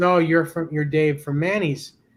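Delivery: plain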